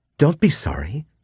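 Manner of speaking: very high, delighted, pleased giggling tone. A woman answers the narrator's apology, giggling. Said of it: "she giggled".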